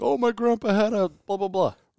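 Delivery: put-on high, loud scream. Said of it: "someone's screaming at the radio like".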